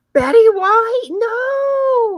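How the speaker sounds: loud, high, anguished cry of disbelief. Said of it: "I'm like".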